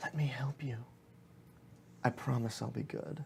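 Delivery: very soft, hushed, seductive whisper, close in. Running a game scene, the speaker voices a voice whispering in a player's ear. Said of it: "a voice whispers in your ear".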